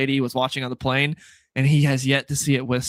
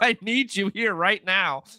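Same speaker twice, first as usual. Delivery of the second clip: put-on crying voice, higher; 7 semitones higher than usual. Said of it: "crying to Superman".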